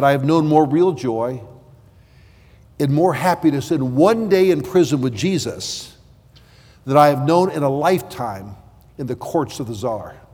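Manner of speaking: ordinary delivery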